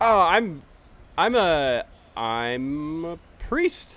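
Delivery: halting, unconfident, very slow, unsure. Answering in character why he travels to Shimmerwell: unconfident, hesitant. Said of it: "you don't sound very confident".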